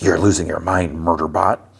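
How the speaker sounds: acted-out whispered words. Retelling a scene where a character speaks quietly: retelling a whisper. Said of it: "Grathan whispers".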